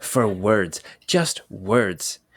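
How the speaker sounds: dropped, slow low voice. Recounting a character's speech in a scene, imitating his lowered voice. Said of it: "He kind of lowers his voice".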